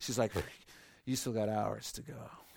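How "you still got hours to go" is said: seen-it-all, unimpressed nurse voice with zero sympathy. Retelling what a nurse tells the couple in labor: imitating a jaded nurse. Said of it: "she's so jaded".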